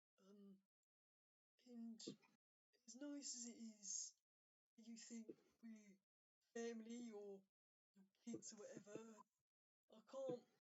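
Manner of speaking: small, hushed, quiet, soft-spoken voice. A narrator voicing a character's line in a scene, in a quiet voice. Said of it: "you hear a quiet voice come from Mo".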